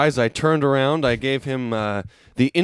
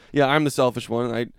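ordinary delivery

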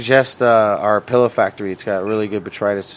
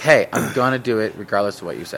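plain

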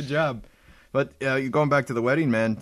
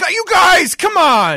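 mock pleading, higher and louder; 12 dB louder than usual. Imitating a friend pleading with a teasing crowd: imitating someone pleading. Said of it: "the pleading with the crowd".

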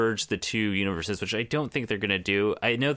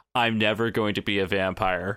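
put-on flat deadpan delivery. Retelling a comic scene to the audience, imitating deadpan Jubilee. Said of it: "stares at the camera deadpan".

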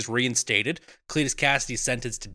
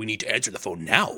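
excited, urgent delivery, pushed out, all worked up; 4 semitones lower than usual. Retelling a film scene where the phone rings: imitating an excited Venom. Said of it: "that makes Venom very excited".

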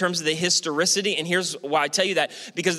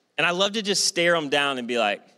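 plain

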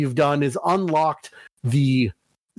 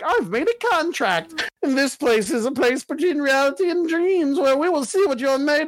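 strange, very high-pitched put-on voice; 10 semitones higher than usual. Describing the game character who rules the Velvet Room, in his weird voice. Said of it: "he talks like this weird voice".

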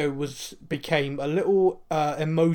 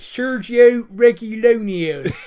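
West Country accent, much higher and louder; 7 semitones higher, 9 dB louder than usual. Trying out the name Sergio Reguilón for the others, say it in a West Country accent. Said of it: "I try and do it in West Country".

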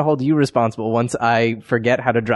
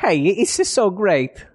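put-on Italian accent, much higher pitch; 7 semitones higher than usual. Asking to sound like Mario while thanking everyone, doing a Mario impression. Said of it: "I want to sound like Mario".

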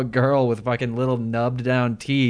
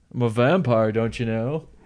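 mocking, poking-fun tone. Acting out a wannabe vampire complaining about his fake teeth: mocking a wannabe vampire.

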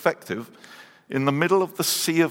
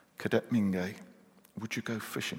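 very soft, hushed whisper; 5 semitones lower, 11 dB quieter than usual. Retelling an officer whispering to a cadet during prayer: imitating a whisper. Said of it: "he whispers in my ear".

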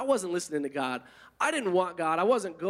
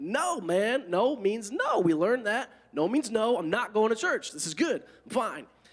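irritated, fed-up, slow, annoyed delivery; 4 semitones higher than usual. Retelling refusing a friend's repeated church invitations: retelling an annoyed refusal. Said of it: "I was getting annoyed".

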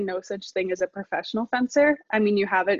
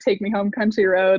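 ordinary delivery

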